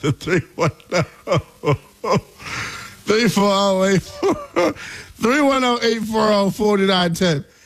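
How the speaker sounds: talking through laughter. Reading out a phone number after a caller hangs up, laughing while talking. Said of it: "Y'all know why I'm laughing".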